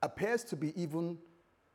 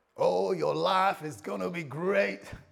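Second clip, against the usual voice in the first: put-on American accent like a US preacher; 4 dB louder than usual. Preacher addressing his church, mimicking his American brothers with a put-on American accent. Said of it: "Talking like my American brothers".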